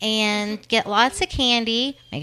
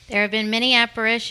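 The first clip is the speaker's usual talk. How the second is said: ordinary talk, nothing marked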